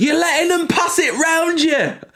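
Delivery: very high, loud hollering. Retelling what a guy a few rows behind shouted: imitating a fan shouting. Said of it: "who just shouts".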